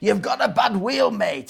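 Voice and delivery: put-on Welsh accent. Telling a story, voicing the truck driver's words to Dave in a Welsh accent. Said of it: "in his Welsh voice".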